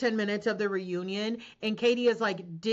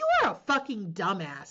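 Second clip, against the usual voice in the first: mock spitting each word out, swooping pitch. Retelling own reply to someone: imitating spitting words out. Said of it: "I just spit".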